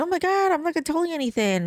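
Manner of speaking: play-acted, high, haughty, entitled, can't-be-bothered tone. Imitating police who refuse to answer questions: mock entitled tone. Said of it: "they act entitled".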